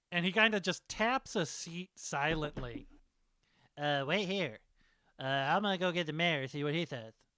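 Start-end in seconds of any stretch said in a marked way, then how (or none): 3.7-7.1 little man voice. Voicing a three-foot-tall character who tells someone to wait while he gets the mayor, small guy voice. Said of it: "I was trying to do a small guy voice".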